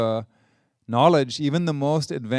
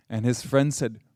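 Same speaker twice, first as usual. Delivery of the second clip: normal talking voice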